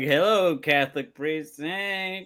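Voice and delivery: put-on slow, childlike little-kid voice.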